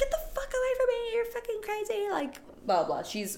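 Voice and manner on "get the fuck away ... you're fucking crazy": play-acted very high, frightened, terrified shrieking scream. Recounting a scene where Nicole, hit in the face, screams at him: retelling a terrified scream. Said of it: "She's screaming".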